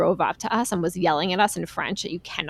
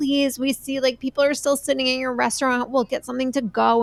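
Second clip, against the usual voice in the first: high-pitched, desperate, begging plea; 6 semitones higher than usual. Telling a story about a closed restaurant in France, retelling desperate pleading. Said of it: "We were like pleading".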